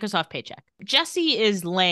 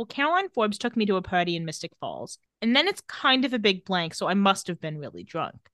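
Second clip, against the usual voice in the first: ordinary talk, nothing marked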